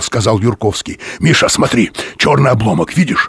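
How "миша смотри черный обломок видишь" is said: whispering very quickly. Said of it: "Он говорил очень быстро и шепотом".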